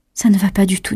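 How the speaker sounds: ordinary delivery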